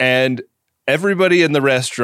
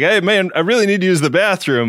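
high, raised, loud yell; 6 semitones higher than usual. Retelling how a man called to the people in the kitchen: retelling a yell for attention. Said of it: "he's like yelling at people in the kitchen".

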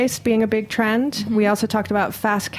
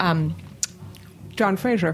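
talking with mouth full of food; 4 semitones lower, 4 dB quieter than usual. Naming a restaurant's chef, talking with mouth full. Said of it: "I had pizza in my mouth".

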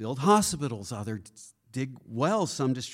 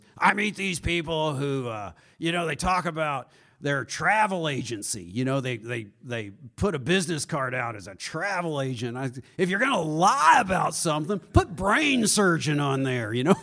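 rough, gravelly businessman storytelling voice; 3 dB louder than usual. Retelling what a businessman friend says about people's business cards: imitating Gary Genter's gravelly voice. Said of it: "He's got this real gravelly voice".

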